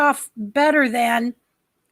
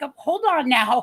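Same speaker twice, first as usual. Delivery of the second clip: plain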